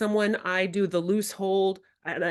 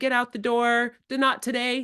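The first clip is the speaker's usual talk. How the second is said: put-on screaming voice of an upset child; 4 semitones higher than usual. Retelling how a child screamed at the speaker to leave: imitating a child screaming. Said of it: "this kid screamed at me".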